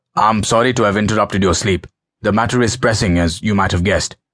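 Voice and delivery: steely, hard-edged, precise delivery. Narrating a 2 a.m. phone call, the caller speaks to Abdul in a steely, precise voice. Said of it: "The voice at the other end was steely, precise".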